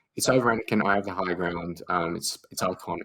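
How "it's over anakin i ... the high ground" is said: ordinary talk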